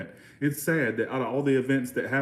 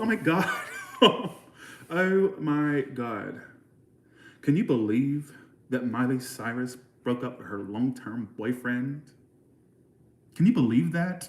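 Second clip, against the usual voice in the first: put-on American West Coast accent. Showing how people from the West Coast talk, doing a put-on West Coast accent. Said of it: "West Coast".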